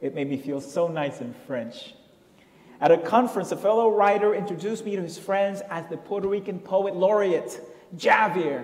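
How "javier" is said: Javier with heavy stress on the Ja syllable. Recalling a fellow writer introducing him at a conference: stress on first syllable of Javier. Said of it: "to hear the first syllable stressed so dactylically".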